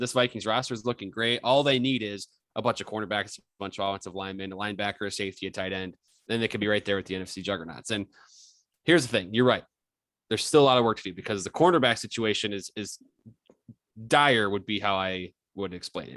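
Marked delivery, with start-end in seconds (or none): none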